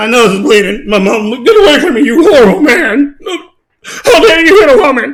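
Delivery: offended, aggrieved upset voice, drawn out. Retelling a fighter's words after the fight: imitating someone upset. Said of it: "Why are you all upset now?".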